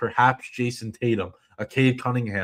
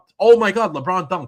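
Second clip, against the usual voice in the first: mock overexcited yelling, much higher and louder; 8 semitones higher, 7 dB louder than usual. Mocking how he sounded when LeBron dunked, imitating overexcited reaction. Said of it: "it sounded like he's gonna have a stroke when LeBron dunked".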